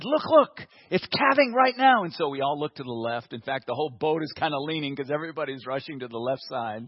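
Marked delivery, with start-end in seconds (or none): 0.0-2.0 excited, raised, drawn-out call. Telling of a boat trip, the speaker retells the captain's excited call. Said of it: "The captain was very excited".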